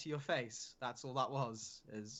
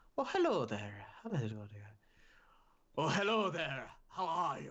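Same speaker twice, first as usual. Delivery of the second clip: put-on Irish accent in a character voice; 2 semitones higher than usual. Asked by a viewer for an Irish Vegeta, a performer tries it: Irish Vegeta voice. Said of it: "I do an Irish accent again".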